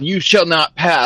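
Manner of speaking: yelling out loud. A player announces his character's action in a game, yelling. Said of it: "I'm gonna yell".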